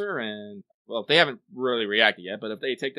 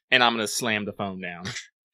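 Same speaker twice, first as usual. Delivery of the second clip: ordinary talk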